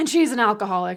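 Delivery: ordinary delivery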